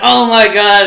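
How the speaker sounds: high, loud mock gasp, yelled.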